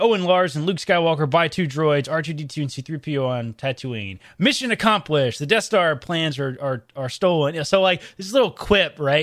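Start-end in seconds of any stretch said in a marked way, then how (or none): none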